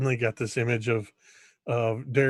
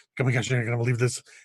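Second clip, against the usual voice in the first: rushed rapid-fire delivery, much faster. Demonstrating a way of explaining something, very fast talking. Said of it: "in that very fast way of talking".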